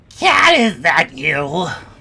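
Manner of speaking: piercing, shrill, loud calling out. A voice calls out from the center of a chamber, shrill voice. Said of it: "you all hear a shrill voice call out".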